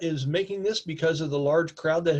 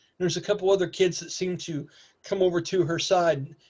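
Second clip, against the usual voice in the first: ordinary talk, nothing marked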